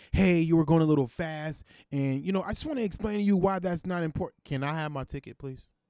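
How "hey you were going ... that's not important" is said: preachy, sermonizing, lecturing voice. Speaker retells being stopped for speeding, mimicking a preachy cop. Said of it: "a cop called himself trying to preach to me".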